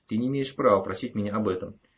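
ordinary delivery

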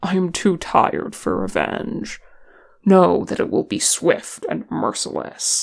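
ordinary delivery

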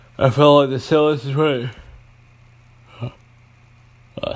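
loud, high speech through a yawn. Recalling a past stay to a listener: yawning while talking. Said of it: "sorry, I'm yawning".

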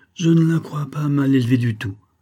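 stuttering hesitantly. The baronet answers the major's question about the girl, stammering. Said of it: "balbutia Sir Rupert".

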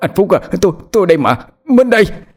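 stammering. Reading Hùng's words to Phúc, who sits beside him, stammering. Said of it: "Hùng lắp bắp trong miệng".

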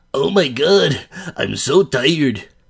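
loud, high put-on Mexican accent. Announcing it to the listeners, the speaker performs a Mexican accent impression. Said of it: "this is my impression of a Mexican".

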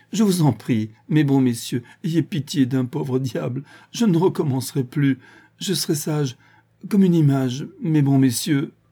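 mocking, high-pitched voice spoken through laughter. Facing men about to be ordered to fire, begging mercy while laughing. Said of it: "demandait grâce en riant".

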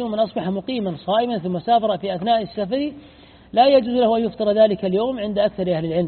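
ordinary talk

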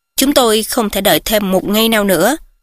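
ordinary delivery, nothing marked

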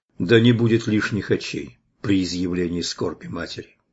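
ordinary delivery, nothing marked

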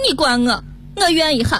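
tearful Shaanxi dialect wail, rising high.

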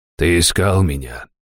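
quiet, husky voice. A powerful man questions the newcomer who sought him, quiet, husky voice. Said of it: "Голос был негромкий, с хрипотцой".

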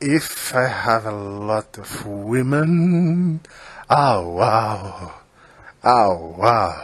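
low voice, broken English, "uau" stretched out. Greeting the viewers before the topic, a Zé Bonitinho moment with horrible English. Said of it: "um momento Zé Bonitinho com o inglês horrível".

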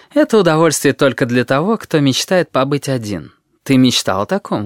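plain reading voice

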